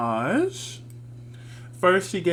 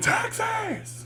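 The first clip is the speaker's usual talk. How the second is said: very high screamed shout. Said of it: "Come out screaming".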